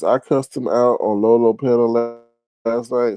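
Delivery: plain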